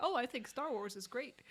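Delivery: normal talking voice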